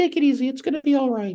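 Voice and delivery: very high, squeaky, soothing, calming voice. Retelling how Josh calmed you down, doing his voice: Josh's high, squeaky voice. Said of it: "he had that high, squeaky voice".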